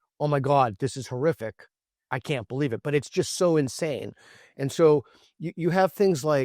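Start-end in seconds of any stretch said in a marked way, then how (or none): none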